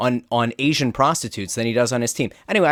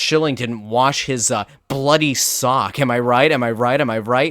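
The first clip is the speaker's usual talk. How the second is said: ordinary talk, nothing marked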